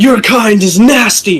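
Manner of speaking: very loud, shrill, enraged furious yell. A furious character spits on another man and yells at him, furious yell. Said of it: "and he yells".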